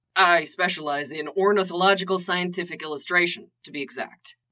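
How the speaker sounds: plain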